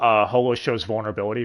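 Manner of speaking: ordinary talk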